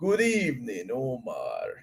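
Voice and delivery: Transylvania-style voice. Greeting a viewer in the chat, done in a Transylvania voice. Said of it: "Hope that was my good Transylvania voice".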